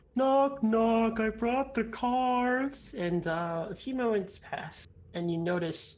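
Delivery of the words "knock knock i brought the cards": ogre voice, much higher. Voicing an ogre knocking at the party's door, ogre voice. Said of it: "but it's an ogre, / He says".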